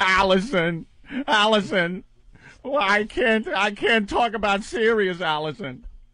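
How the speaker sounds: fake whining, crying voice. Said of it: "I'm crying".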